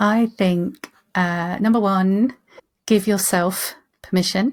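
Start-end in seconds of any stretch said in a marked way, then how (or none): 3.1-3.7 heavy stress leaning on "yourself". Answering the host's request for three top tips, stress on 'yourself'. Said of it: "emphasis on the yourself".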